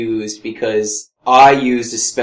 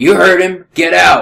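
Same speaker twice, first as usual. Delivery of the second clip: forceful, high-pitched, loud yell; 7 semitones higher, 6 dB louder than usual. Playing a character, ordering the dwarf to get out: yelling. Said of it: "I'm going to yell at the dwarf".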